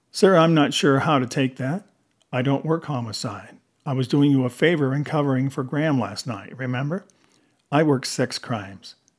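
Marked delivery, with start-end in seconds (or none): none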